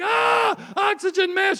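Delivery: very high-pitched, frantic, panicked screaming cry. Acting out a plane landing in the river: imitating people screaming. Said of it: "People screaming".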